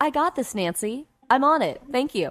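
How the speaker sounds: put-on confident voice. Telling a caller how they sound now after advice: imitating the caller sounding confident. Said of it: "Now you're like".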